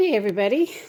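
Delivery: breathless, winded speech. Greeting everybody at the start of the garden experiment, out of breath. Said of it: "Sorry I am winded".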